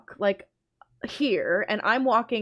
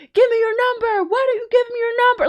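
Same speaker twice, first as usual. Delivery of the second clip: very high, flat, level-toned yelling; 13 semitones higher, 4 dB louder than usual. Retelling men on the street demanding a number: imitating men yelling. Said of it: "yelling at me".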